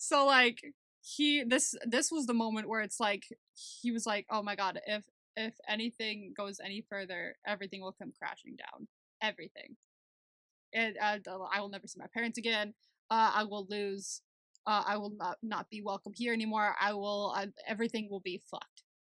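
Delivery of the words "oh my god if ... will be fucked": ordinary delivery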